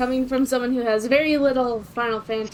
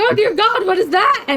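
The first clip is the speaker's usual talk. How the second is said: put-on terrified voice, higher and louder; 10 semitones higher, 8 dB louder than usual. Retelling a first reaction to a terrifying boss: imitating own terrified reaction. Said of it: "I remember this being terrifying when I first went through it".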